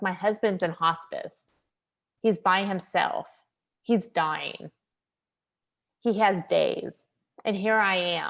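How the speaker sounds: slow, tearful, heavy-hearted voice. Retelling a patient's words as tears flowed down her face: imitating a tearful patient. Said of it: "as tears are flowing down her face".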